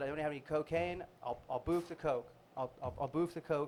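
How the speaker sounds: ordinary delivery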